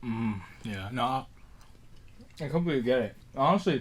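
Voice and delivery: talking while chewing. Agreeing with the other speaker about kids wanting candy, talking while chewing. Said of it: "sorry, I was chewing on something".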